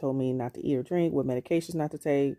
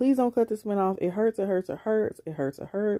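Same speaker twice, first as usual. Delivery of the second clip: high, mock desperate pleading, repeated; 6 semitones higher than usual. Retelling asking staff not to cut off a splint: imitating own begging. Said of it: "And I was begging".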